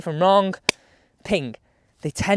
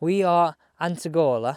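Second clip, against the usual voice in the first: put-on Italian accent; 3 semitones lower than usual. Speaker names the golf course they are testing at, in an Italian accent. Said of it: "you have to say it in my Italian accent".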